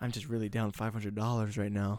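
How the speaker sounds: put-on whispering. Acting out a trick so believers overhear a need: acting out a whisper. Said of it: "You just, like, whisper it".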